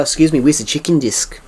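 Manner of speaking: put-on New Zealand accent. Retelling a New Zealand person at a check-in desk, New Zealand accent. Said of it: "you would hear a New Zealand person say".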